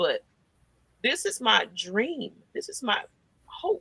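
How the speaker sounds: soft, slightly emotional tone. Guest speaking to the host about being on the show, getting a little emotional. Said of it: "I'm sorry I'm getting a little emotional about this".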